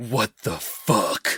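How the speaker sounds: play-acted, breathless, gasped-out swear. Retelling the main character's first line in the game: imitating breathless exclamation. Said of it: "your main character breathlessly going".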